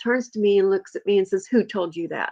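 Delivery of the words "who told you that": imitated angry voice. Retelling a mother stopping dead and turning: imitating an angry demand. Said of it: "Like that".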